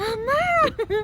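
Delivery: terrified, very high, loud crying yell.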